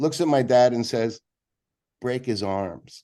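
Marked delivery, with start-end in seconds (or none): 2.0-3.0 acted dry, flat, expressionless deadpan delivery. Retelling the answer given when the speaker's dad asked for advice: deadpan reply. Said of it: "McVie deadpans".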